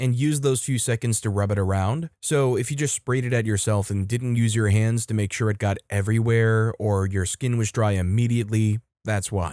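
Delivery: ordinary delivery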